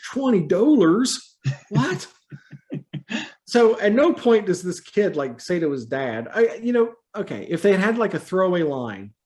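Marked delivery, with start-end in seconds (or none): 0.1-2.1 wild, exaggerated Canadian accent, higher pitch. Recapping a story, quoting the kid who cannot afford the shoes, in a crazy canadian accent. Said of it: "kid has a crazy Canadian accent".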